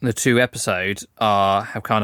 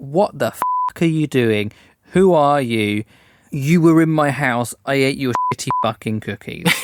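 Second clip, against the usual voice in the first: put-on heated, indignant, furious outburst; 4 semitones higher than usual. Retelling a scene where he confronts her: imitating someone mad. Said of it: "He was, like, mad".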